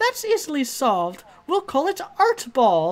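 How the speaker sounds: loud, high, squeaky, bouncy sing-song cartoon voice. Voicing a game character who replies to another player: Mickey Mouse-like voice. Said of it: "why did you make her sound Mickey Mouse? / We will play it with watercolors and sequins, and there shall be a sport bard and a goalie, / why did you make her sound Mickey Mouse?".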